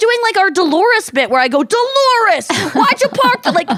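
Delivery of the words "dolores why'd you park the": put-on, slow, high New Jersey accent. Recalling a shared comedy bit, doing the jersey couple bit voice. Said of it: "that's our Jersey couple bit".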